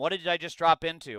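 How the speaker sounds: ordinary delivery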